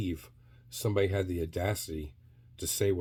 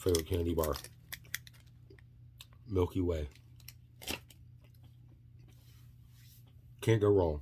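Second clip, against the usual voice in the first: chewing, speaking with food in mouth. Talking to viewers while eating a candy bar: mouth full, chewing. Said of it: "Sorry for chewing".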